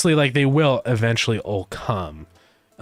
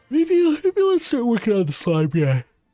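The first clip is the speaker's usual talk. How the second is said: words stretched out by a very high-pitched yawn; 12 semitones higher than usual. Planning work on the slime guy aloud, the speaker says: yawning while talking. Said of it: "I'm yawning so hard".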